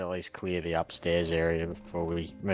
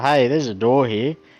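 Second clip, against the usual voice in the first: calling out loudly; 7 semitones higher, 13 dB louder than usual. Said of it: "I'm gonna yell out to".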